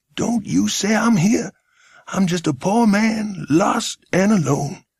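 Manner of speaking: put-on hoarse whisper, American accent. Reading a story, a hidden man begs not to be given away: hoarse whisper, american accent. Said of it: "hoarse whisper. He sounded like an American".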